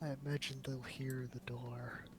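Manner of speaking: hushed voice. In character, warning the group the enemies will hear the door: whispering. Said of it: "I whisper".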